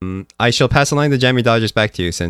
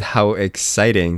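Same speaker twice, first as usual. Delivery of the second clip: plain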